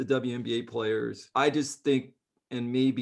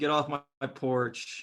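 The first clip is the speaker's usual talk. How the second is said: ordinary talk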